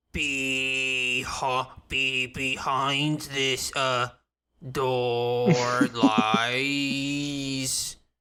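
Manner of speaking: very slow, stumbling, halting, broken-off reading. Voicing a creature held upside down, trying to read runes: struggling to read upside down. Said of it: "It's really hard to read upside down".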